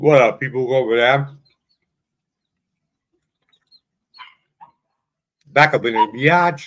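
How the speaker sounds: mouth full, chewing between words. Greeting listeners at the start of the weekly episode, talking while eating. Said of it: "I'm eating fucking crustal".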